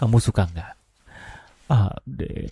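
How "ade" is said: naughty, breathy, teasing whisper. Asking if you'd like being called ade in a naughty tone: teasing 'ade'. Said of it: "dengan nada-nada yang nakal".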